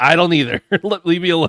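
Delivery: imitated gruff tone. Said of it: "I just got real gruff with him".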